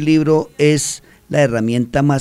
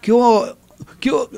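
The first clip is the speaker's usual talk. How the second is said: high, loud, slangy schoolkid voice. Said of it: "no se saludan como hoy".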